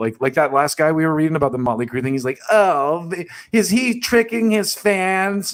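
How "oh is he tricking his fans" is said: high, very slow, whining drawl. Imitating a writer's article line in mock whiny tone. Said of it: "a really whiny tone".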